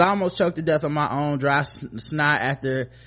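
ordinary talk

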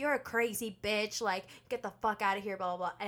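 usual speaking voice

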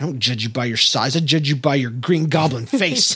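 put-on muttering under the breath. Retelling what Jenna said about a Yoda shirt: imitating Jenna muttering under her breath. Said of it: "kinda talking under her breath".

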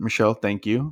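sarcastic, mocking tone. Thanking someone for the topic they picked: sarcastic thank you. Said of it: "it's a sarcastic one".

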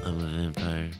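quiet, low vampire voice. Speaker mocks how an actor talks in the Twilight movies: Rob Pattinson impression. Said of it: "he talks like this".

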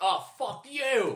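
put-on cranky old man, very high. Joking about a rude old man in a café: imitating a racist old man. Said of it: "racist old man going like".

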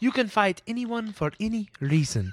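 put-on Indian accent in a guru style. Retelling what a man tells someone, in a Deepak Chopra-like accent. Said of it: "Feel free to use that accent".

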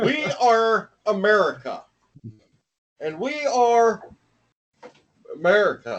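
slow, swooping oratorical delivery with sweeping pitch rises. Making fun of a lost speech as a Barack Obama impression. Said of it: "a legendary Barack Obama speech".

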